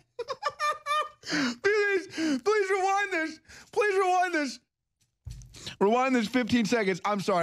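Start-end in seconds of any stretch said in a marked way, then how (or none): 2.2-7.0 high voice, laughing helplessly. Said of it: "I'm trying to hold back my laughter".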